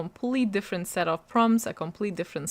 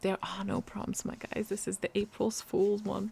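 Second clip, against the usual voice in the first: very soft, hushed whisper under the breath; 7 dB quieter than usual. Explaining the readathon board while hiding it from Logan, whispering. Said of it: "I have to whisper".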